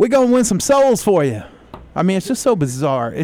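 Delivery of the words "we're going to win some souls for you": put-on little girl voice, high and loud.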